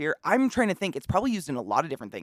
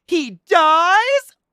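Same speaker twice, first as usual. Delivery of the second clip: high, loud, shrill shocked yell, "dies" drawn out; 12 dB louder than usual. Retelling a line yelled in a funny video: imitating a shocked yell. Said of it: "yelled out in, in a shocked voice".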